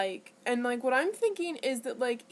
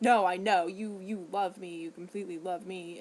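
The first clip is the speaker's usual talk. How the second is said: mock biting, sharp, snapped, fired-right-back delivery; 5 semitones lower than usual. Retelling his reply while grocery shopping: imitating someone snapping.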